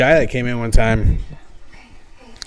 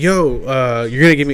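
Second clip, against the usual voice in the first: ordinary talk, nothing marked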